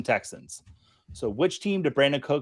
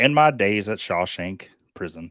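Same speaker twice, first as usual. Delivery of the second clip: unhurried, weighty, low, slow movie-narrator voice; 6 semitones lower, 4 dB louder than usual. Answering others who say the voice sounds like God: Morgan Freeman voice. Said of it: "saying that's not Morgan Freeman".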